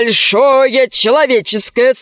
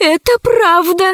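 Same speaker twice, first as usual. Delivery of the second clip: shaky, quavering, trembling high-pitched voice; 8 semitones higher than usual. Zauri backs up the speaker's claim, in a trembling voice. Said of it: "дрожащим голосом подтвердила Заури".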